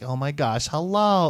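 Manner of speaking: voice lifted high and light, put-on. Imitating how an uncle acted and talked: put-on higher voice. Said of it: "more of a higher voice".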